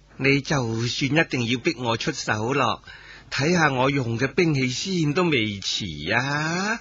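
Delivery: soft, sugary, cutesy coaxing coquettish voice. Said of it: "嗲声嗲气咁话".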